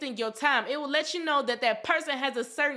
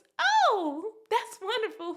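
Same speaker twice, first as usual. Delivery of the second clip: high-pitched, fake-sounding put-on voice; 8 semitones higher than usual. Mocking fake people reacting to your good news, in a Mickey Mouse high voice. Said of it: "They hit you with the Mickey Mouse high voice".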